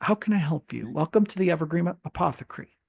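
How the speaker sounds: put-on elderly elf woman's character voice. Describing a scene, an old elf woman steps forward at the Evergreen Apothecary: elderly female elf voice. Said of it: "an elder female elf".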